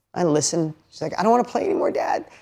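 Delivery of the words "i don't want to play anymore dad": put-on weepy, tearful, crying child's plea. Retelling a daughter's words in a parking lot: imitating a crying daughter.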